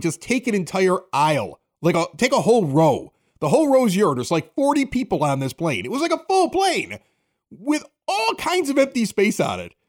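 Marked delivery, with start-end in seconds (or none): none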